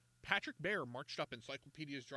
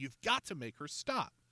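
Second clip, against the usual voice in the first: usual speaking voice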